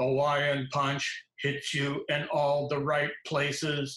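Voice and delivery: flat, monotone robotic commercial-announcer voice. Retelling a commercial line he voiced, in a robot voice. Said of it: "I did in a robot voice".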